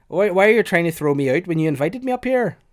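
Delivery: put-on poor Scottish accent.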